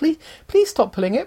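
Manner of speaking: put-on feeble voice. Retelling what a woman said, imitating a feeble voice. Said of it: "In a sort of feeble voice".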